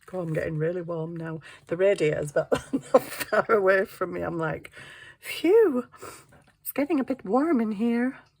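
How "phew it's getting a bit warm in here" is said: high, little toy-doll voice. Speaker sitting close to a radiator and getting warm, in a doll voice. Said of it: "I just did that doll voice".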